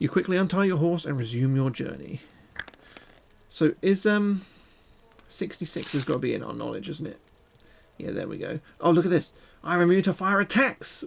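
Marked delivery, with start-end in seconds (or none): 9.6-11.0 excited, light, pitched-up mild exclamation. Reading the story aloud, the speaker gives a line with an exclamation mark, shouting. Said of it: "We're shouting that one with the exclamation mark".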